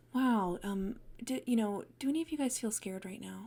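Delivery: gentle, mild, soft, own natural pitch. Showing how a performer voiced the mom in Burrows End: talking more softly. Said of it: "he just kind of talked more softly".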